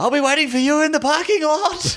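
put-on, very high-pitched hollering yell. Retelling what a husband yelled while security dragged him out: imitating a man yelling. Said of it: "he was yelling".

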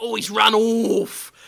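loud, over-the-top, exaggerated British orc voice. Describing how someone talks when playing an orc, exaggerated british orc voice. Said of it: "in that certain pronunciation of words that actual British people know".

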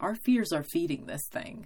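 ordinary delivery

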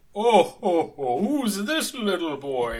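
loud, jolly character voice, belted out.

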